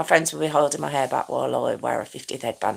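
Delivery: low, soft, rushed whisper.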